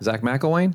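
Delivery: rising pitch on the word McElwain. Demonstrating an upward inflection while calling someone's name: rising question pitch on mcelwain. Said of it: "an upward inflection there is eliciting a response like I'm asking a question".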